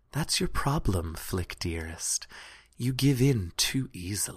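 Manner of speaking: under the breath. Narrator voices her as she gets near one player: quietly, under her breath. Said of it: "just quietly enough so that only you can hear her".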